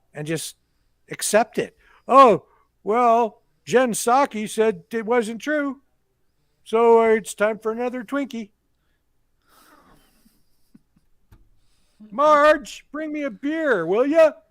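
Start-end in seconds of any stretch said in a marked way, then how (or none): 2.0-14.3 bad cartoon character voice, pitched up high. Doing an impression later called the worst ever heard, in Homer Simpson voice. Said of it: "worst Homer Simpson impersonation".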